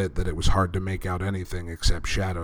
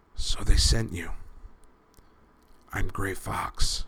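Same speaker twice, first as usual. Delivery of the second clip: faint, weak, faltering, slow whisper; 3 dB quieter than usual. A badly injured prisoner answers the man who found him, whispering. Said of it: "the man whispered back through cracked lips".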